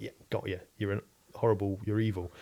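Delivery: ordinary delivery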